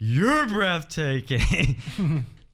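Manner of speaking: put-on giddy, gushing, excited kid-like delight. Retelling a game conference moment, imitating Keanu Reeves, giddy like a little kid. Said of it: "He's like a little kid who's coming out".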